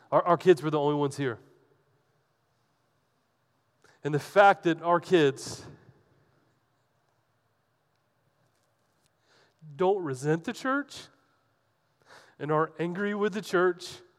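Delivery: crying, tearful, choked-up voice. Speaking at the church after making a joke, crying while speaking. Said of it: "Sorry, I'm crying".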